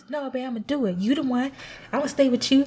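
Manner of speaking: teasing, ridiculing mock delivery. Telling a story about her partner and quoting what he said: mocking imitation of Mike. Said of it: "Your mocking me voice is crazy".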